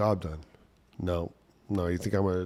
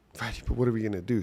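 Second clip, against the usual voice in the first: mock tearful, fast, panicked crying; 3 semitones higher than usual. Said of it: "She's crying".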